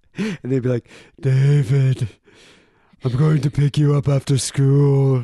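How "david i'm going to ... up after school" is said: loud, exaggerated, husky, raspy mom voice. Retelling how high-school friends mocked a mother's voice: friends mocking mom's raspy voice. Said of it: "all my friends would make fun of my mom's voice".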